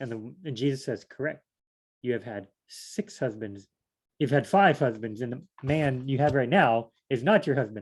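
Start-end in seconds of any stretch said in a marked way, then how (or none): none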